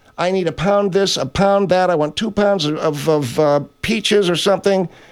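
ordinary talk

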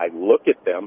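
low, spooky, creepy voice.

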